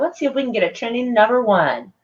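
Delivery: mocking, sarcastic tone of voice. Retelling a post by Alyssa Milano: sarcastic Alyssa Milano imitation. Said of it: "And sarcastically, of course, she's like".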